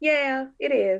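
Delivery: resigned, high-pitched and slow.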